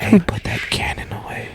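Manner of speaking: soft, hushed, breathy whisper. Imagining how he reacted to your cannon, speak as Joe Biden whispering. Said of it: "He probably whispered at me".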